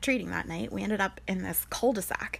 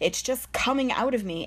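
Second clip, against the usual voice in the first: plain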